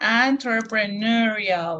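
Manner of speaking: "entrepreneurial" said slowly, drawn out syllable by syllable. Showing how the word sounds: slow pronunciation of entrepreneurial. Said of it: "That's that's how it sounds slowly".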